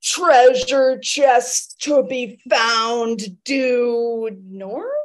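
booming, loud, slow resounding delivery, "due" stretched out. Telling Ren after getting back down, booming slow voice. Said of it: "I tell Ren in like this booming slow voice".

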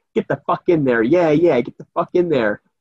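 put-on loud drunk woman voice. Retelling a drunk woman at the scratch-off ticket machine: imitating a loud drunk woman. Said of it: "she starts getting really sexual and she's like loud".

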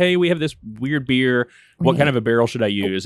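ordinary delivery

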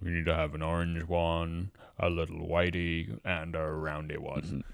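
still, manly, macho voice. Retelling a scene where Bill sorts Frank's pills, in Bill's still manly macho voice. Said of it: "in his like very still manly macho voice".

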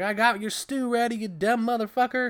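screeching, shrill, very high yelling holler. Retelling how a woman yelled at a man from inside the house: retelling a yell. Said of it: "Ethel's yelling at him like".

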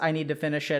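plain

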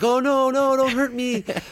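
very high, slow, scared, frightened pleading. Acting out facing a ghost while too scared: acting out being scared. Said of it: "you're scared".

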